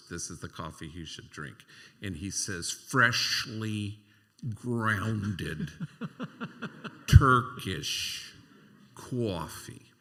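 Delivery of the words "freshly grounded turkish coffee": very loud, very slow, drawn-out put-on New York accent. Retelling what a man said to passersby, imitating a New York accent. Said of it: "[Imitating New York accent.]".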